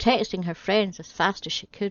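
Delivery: ordinary delivery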